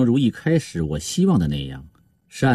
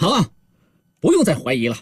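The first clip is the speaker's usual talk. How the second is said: abrupt, sudden, high-pitched exclaimed outburst; 5 semitones higher than usual. Reading a novel, a man looking at another man suddenly speaks: sudden loud exclamation. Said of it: "他突然大声说道".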